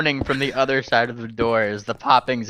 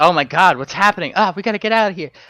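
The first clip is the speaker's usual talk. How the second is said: high, panicked, mock-frightened crowd cries; 5 semitones higher, 3 dB louder than usual. Voicing a crowd reacting to booms at a party: panicked crowd reaction. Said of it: "there's a collective, like".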